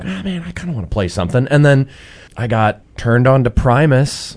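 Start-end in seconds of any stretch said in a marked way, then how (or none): 0.0-1.5 high, fast, eager, wistful musing. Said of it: "So I was like".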